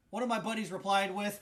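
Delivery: plain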